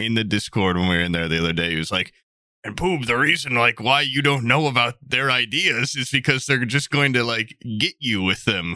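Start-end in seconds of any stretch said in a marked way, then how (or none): 2.6-8.8 just talking, relaxed and casual. Recounting what Stalt told Poob in the Discord, the speaker quotes him: Stalt impression. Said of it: "Stalt impression".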